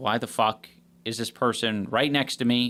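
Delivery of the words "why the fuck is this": usual speaking voice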